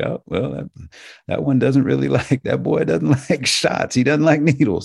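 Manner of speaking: talking through a chuckle. Retelling what the doctor said on the other end, imitating a chuckling doctor. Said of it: "the doctor on the other end kind of chuckling".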